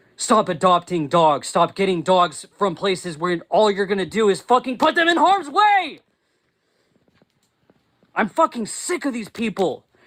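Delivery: furious, heated rant with pitch climbing. Ranting about people who keep putting dogs in harm's way: angry yelling. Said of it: "I need to stop yelling".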